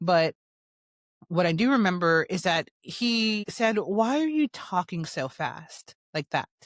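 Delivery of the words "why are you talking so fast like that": mock incredulous, disapproving, condescending, swooping talking-down tone. Retelling a man's question in front of a room of professionals, imitating a what's-wrong-with-you tone. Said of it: "what is wrong with you type of tone".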